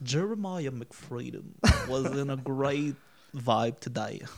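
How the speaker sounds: slow, soothing narrator voice. Narrating someone's day as a calm narrator: Morgan Freeman narrator voice. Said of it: "Tandis que Morgan, ça serait".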